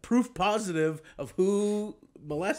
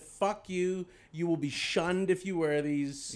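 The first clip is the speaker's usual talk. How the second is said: ordinary delivery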